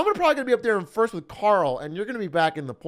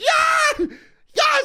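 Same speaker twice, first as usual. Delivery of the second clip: very high, loud, starstruck gushing freak-out; 6 dB louder than usual. Retelling a woman's reaction on hearing he'll film The Boys: imitating her flipping out. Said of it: "And she like flips out".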